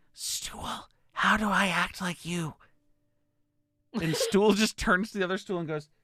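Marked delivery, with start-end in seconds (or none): 0.2-2.5 slow, drawn-out, hushed whisper. Game narrator voicing what everyone hears through the spores; whispering. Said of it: "you just hear like in a whisper tone".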